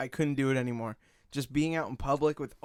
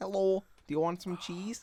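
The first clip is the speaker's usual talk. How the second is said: put-on heavily laid-on, pitched-up Wisconsin accent; 7 semitones higher than usual. Recalling a woman from Wisconsin who talked like Sarah Palin, doing a Principal Victoria impression. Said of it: "That was actually a good accent for you".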